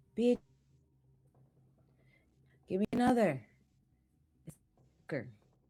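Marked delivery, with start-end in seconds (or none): 0.2-3.4 very loud, shrill, high-pitched yell. Voicing a character in a bar calling out to the bartender: yelling at the bartender. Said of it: "he yells to the".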